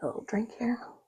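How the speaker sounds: quiet whispered voice.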